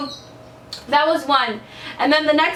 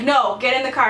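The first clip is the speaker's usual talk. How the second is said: ordinary talk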